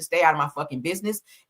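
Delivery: ordinary talk, nothing marked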